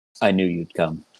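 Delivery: soft, hushed half-whisper, barely there. A narrator voices a long-lost love greeting you on your return, half-whispering. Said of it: "And he just whispers".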